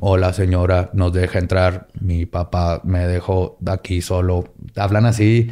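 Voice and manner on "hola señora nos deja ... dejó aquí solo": deadpan, very low, flat monotone. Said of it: "en una voz monótona".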